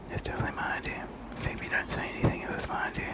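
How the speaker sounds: breathy, insistent whisper, barely audible. Answering whose idea the videos were, whispering.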